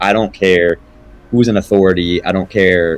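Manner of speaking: ordinary talk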